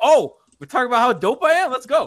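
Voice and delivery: mock suddenly keen, perked-up, loud, boastful voice. Retelling a talk with Hassan about his rebounding, imitating Hassan perking up. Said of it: "Dude perks up".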